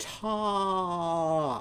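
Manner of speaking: top stretched slow and high. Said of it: "Say the word top again".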